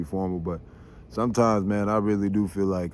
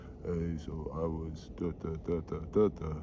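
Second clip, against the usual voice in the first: very quiet, level, flat robot monotone drone; 3 semitones lower, 10 dB quieter than usual. Speaker showing what he tries not to sound like, monotone robot voice. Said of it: "sound like a monotone fucking robot".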